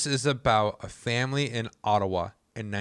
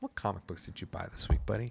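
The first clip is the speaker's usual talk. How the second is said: lowered, therapist-like voice, much quieter; 9 dB quieter than usual. Switching to talking about things you love, in a lowered, therapist-like voice. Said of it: "I also just lowered my voice like a therapist".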